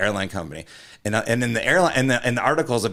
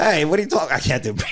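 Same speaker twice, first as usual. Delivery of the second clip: clumsy, bad put-on British accent, pitched up; 6 semitones higher than usual. Playing the British guy in a prequel to Cocktail, in a British accent. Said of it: "because he has the British accent".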